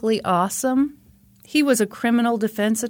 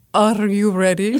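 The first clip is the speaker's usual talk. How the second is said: put-on spooky, eerie, creepy voice; 3 semitones lower than usual. Host starts a bit, asking the co-host if ready, spooky voice. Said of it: "is that a spooky voice?".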